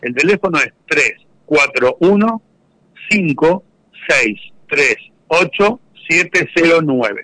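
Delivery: slow, deliberate delivery. Giving a phone number so listeners can take note, very slowly. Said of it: "les hago bien despacito".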